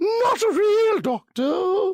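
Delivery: very high, very slow, highfalutin posh British. Trying out different voices for his show, next in a highfalutin british accent. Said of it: "Is that highfalutin enough?".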